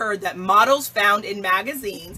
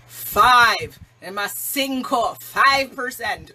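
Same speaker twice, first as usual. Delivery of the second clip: slight put-on Jamaican accent, drawn out. Repeating a statistic for emphasis: a little bit Jamaican accent. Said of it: "I had to get a little bit Jamaican there".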